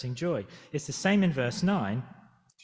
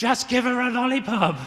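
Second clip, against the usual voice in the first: put-on very high, shrill, loud child's screaming outburst; 10 semitones higher, 6 dB louder than usual. Speaker retells their son screaming out on a plane, retelling son's scream. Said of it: "he just screamed out".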